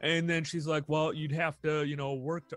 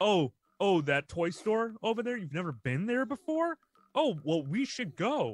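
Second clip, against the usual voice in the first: sarcastic, needling voice; 3 semitones higher than usual. Retelling what he says to his son at the toy store: imitating own sarcastic tone. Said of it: "I talk to him like".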